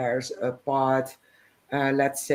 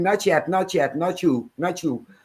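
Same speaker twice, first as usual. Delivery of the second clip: put-on shouting, higher-pitched; 4 semitones higher than usual. Retelling what an ex-CIA man in a program did: imitating someone shouting. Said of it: "and he was shouting".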